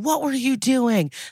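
put-on demanding yell. Retelling how a man yelled at a father about his missing son: retelling a yell. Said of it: "He yells again".

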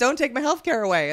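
ordinary talk

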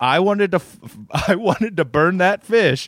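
high, furious, enraged yell with a false start. Telling how a man stormed out over his flushed dead goldfish: retelling a yell.

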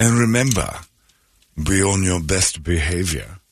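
imitated British accent. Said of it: "he does this British accent".

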